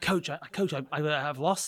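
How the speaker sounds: play-acted, slow, faltering, stammering, stressed delivery. Retelling pleading with a coach before a tournament: imitating own stressed plea. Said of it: "I'm overthinking and I'm stressed".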